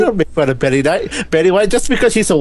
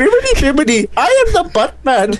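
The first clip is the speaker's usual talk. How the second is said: put-on Indian accent, pitched up; 8 semitones higher than usual. Telling a co-host how not to voice Buttman: Buttman in Indian accent. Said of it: "Are you making fun of Indian people's accents?".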